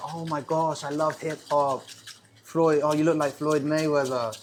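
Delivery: put-on Japanese accent in English. Retelling how japanese people try to relate to them, the speaker does a put-on japanese accent. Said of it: "I impersonate Japanese people. Put on the accent".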